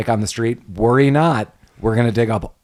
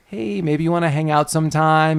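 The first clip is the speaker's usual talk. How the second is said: mock shy, timid, mousy little voice, pitched up; 5 semitones higher than usual. Retelling the town sheriff asking the waitress out: imitating a mousy ask-out. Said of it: "a little mousy about it".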